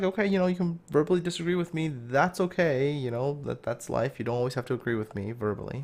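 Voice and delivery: ordinary talk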